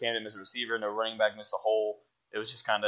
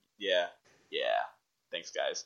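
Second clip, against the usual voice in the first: put-on resigned tone, lower pitch; 5 semitones lower than usual. Retelling how he answered the podcast hosts' congratulations, imitating a resigned tone. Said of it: "he sounded so resigned".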